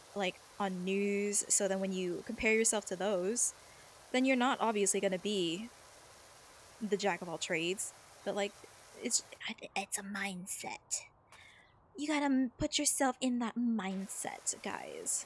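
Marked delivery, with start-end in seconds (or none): 9.8-15.3 mock Valley accent. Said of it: "I'm doing a Valley accent".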